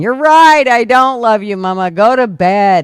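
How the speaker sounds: put-on fed-up retort. Recalling her mom's drinking nights, the speaker replays her own answer: imitating her exasperated past self. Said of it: "I was going".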